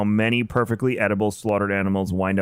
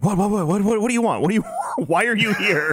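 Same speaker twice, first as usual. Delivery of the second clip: mock, very high-pitched, half-asleep voice; 12 semitones higher than usual. Retelling being poked awake at three in the morning: imitating his own woken-up reply. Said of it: "and then".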